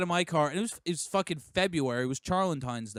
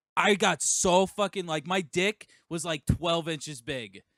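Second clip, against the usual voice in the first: normal talking voice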